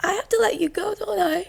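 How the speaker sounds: high-pitched, heartbroken voice.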